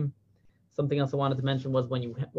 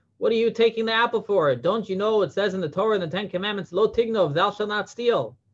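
acted shrill, scolding scream; 7 semitones higher, 4 dB louder than usual. Retelling a story where a kibbutznik catches a boy eating an apple, retelling a kibbutznik screaming. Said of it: "starts screaming at him".

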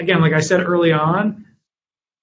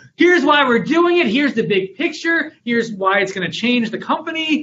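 much higher, energized pitch. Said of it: "I probably should say it with more energy".

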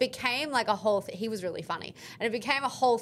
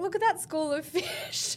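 mock high-pitched giggling through the words; 8 semitones higher than usual. Retelling how he giggled and pointed out to the ocean; imitating him giggling. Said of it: "And he's giggling".

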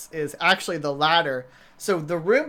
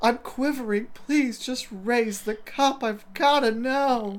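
put-on lustful pleading, much higher; 7 semitones higher than usual. Recapping a scene with a co-host, imitating lustful pleading. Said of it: "it's almost sexual".

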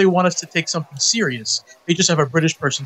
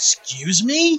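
play-acted surprise, feigned shock, innocent tone; 4 semitones higher than usual. Retelling a reply to people who use the nickname: acting surprised, retold. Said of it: "I'll act surprised and be like".

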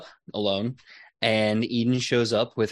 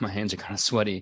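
muttered quietly under her breath; 4 dB quieter than usual. Voicing a character who tells a player something, said under her breath. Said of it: "tells you under her breath".

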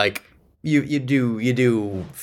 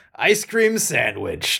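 pleased, pitched-up voice, a little creaky; 5 semitones higher than usual. Retelling what Carl Weathers said at the food line: imitating pleased Carl Weathers. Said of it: "pleased manner".

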